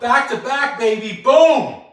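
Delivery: hyped-up, loud, high-pitched yell. Welcoming viewers back at the start of a live session, yelling. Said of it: "I don't know why I'm yelling".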